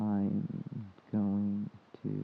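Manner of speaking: very slow, sluggish, dragged-out speech. Describing how another person's talking feels when impatient, mimicking very slow talking. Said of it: "you're talking like this".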